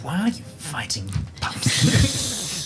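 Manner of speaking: sassy gritted-teeth voice. During a fight, Krestos speaks to an opponent, sassy through gritted teeth. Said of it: "the sass is coming through Krestos's uh, gritted teeth".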